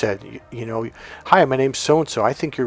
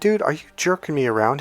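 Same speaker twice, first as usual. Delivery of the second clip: acted fake anger; 3 semitones higher than usual. Retelling coaching a guy, imitating himself acting mad. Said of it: "acted like I was kinda mad at him".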